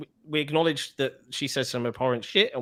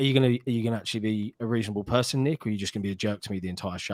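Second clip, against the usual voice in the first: mock deadpan delivery; 4 semitones lower than usual. Retelling what Seamus asked him before they went live, imitating Seamus's deadpan. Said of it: "Seamus was just deadpan".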